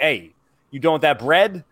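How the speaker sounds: put-on Jersey guy voice. Imitating a goose as a Jersey guy: imitating a Jersey guy. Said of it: "a Jersey guy's like".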